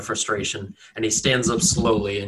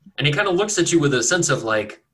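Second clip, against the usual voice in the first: normal talking voice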